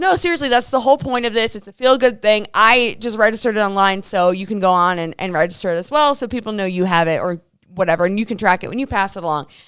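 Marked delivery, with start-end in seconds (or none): none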